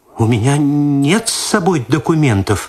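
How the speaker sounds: scared, stammering, small, faltering babble. Reading a story aloud, a woman stopped on the street and asked for documents: frightened babbling. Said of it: "в испуге пролепетала".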